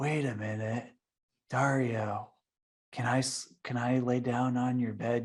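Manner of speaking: slow, unhurried drawl with words spaced apart. Describing a friend who lives in his van, the speaker imitates him: slow cadence. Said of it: "that Keanu Reeves kind of slow cadence to his voice".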